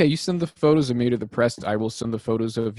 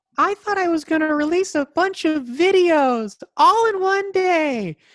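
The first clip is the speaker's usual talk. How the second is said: very high topmost-register voice, drawn out; 3 dB louder than usual. Answering a request to tell what was hoped for 2020: highest voice. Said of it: "in your highest voice".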